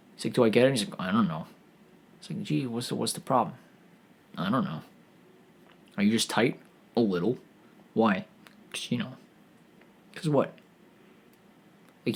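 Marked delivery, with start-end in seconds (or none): 0.4-10.5 mock passive aggressive tone, lower and quieter. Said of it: "he started being all, like, passive aggressive".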